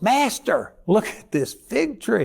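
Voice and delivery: astonished cry. Acting out his words to Jesus, acting out a shocked exclamation. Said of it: "we don't hear the inflection of his voice... He was shocked".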